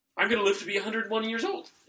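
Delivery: gushing, super enthusiastic, pumped up, pitched very high. Doing Chris Traeger from Parks and Rec, over-enthusiastic Chris Traeger impression. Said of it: "he's super enthusiastic about everything".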